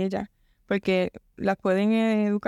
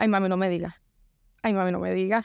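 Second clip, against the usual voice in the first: plain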